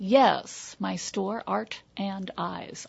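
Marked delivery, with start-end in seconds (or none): 1.5-2.9 slow, deliberate pace with each word spaced apart. Naming the store because people mishear it, said slowly. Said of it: "I say that slowly".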